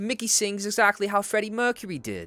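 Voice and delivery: fake, bad British accent, pitched very high. Speaker trying an accent they later call one of their worst: bad British accent. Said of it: "That's my accent. ... one of the worst accents I've ever did".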